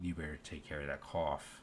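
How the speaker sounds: menacing, threatening, veiled-threat tone. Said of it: "as a threat, um, kinda threatening tone".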